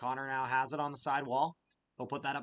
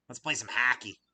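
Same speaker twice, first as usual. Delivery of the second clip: loud Minnesota accent, "hockey" said as "hacky"; 2 semitones lower, 5 dB louder than usual. Speaker explains regional accents and imitates Minnesotans: Minnesota accent. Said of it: "There's a Minnesota accent".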